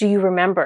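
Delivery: imitated demanding tone. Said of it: "almost demanding it".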